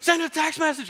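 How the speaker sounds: very high, screamed, yelled delivery. Speaker recalling shouting commands at the car's voice system: retelling own screaming. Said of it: "I'm screaming at it like".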